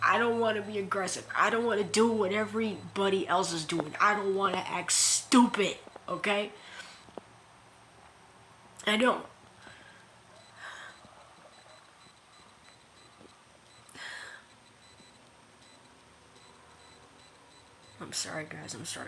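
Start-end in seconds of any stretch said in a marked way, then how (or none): 4.0-19.1 voice choking up with emotion. Speaker addresses his viewers, emotional. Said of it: "I'm just getting emotional".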